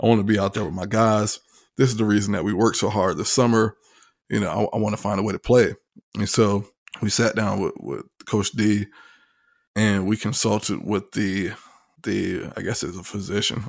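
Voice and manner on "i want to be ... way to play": normal talking voice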